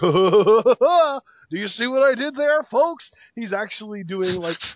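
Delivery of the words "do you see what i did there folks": goofy, slowed-down, high-pitched voice. Mocking the goofy jokes while describing a backstage bit: goofy John Cena impression. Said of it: "that voice impression was so good".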